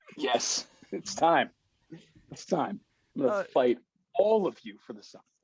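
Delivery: slow, looming, huge serpent voice. Voicing the serpent Apophis as the party meets it: Apophis voice. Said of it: "to play the two hundred and forty foot serpent Apophis".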